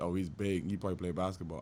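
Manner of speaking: normal talking voice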